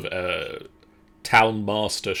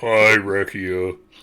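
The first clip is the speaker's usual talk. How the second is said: voice an octave lower; 5 dB louder than usual. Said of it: "it went down an octave every time it was said".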